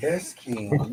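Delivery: very soft, sexy, sultry, seductive voice. Contrasting your own country-bumpkin sound with hers, do a sexy, seductive Kenyatta impression. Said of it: "sexy and seductive".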